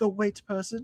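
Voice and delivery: attempted British accent. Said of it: "in the accent".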